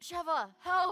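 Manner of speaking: put-on dying game character voice. Retelling how Chris Redfield sounds when he dies: imitating Chris Redfield dying. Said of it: "he goes".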